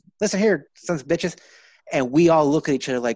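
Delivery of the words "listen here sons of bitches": high, feminine-flavored voice. Retelling a cartoon teacher's first line on screen: Mister Garrison voice. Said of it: "the feminine flavor that he had".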